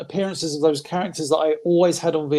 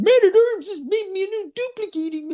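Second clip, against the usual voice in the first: put-on whiny cartoon tiger voice, higher; 13 semitones higher than usual. Complaining about a cartoon character's voice in one episode: imitating Cringer's voice. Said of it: "Cringe's voice in that is, like, I think the worst".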